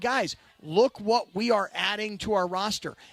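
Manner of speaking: normal talking voice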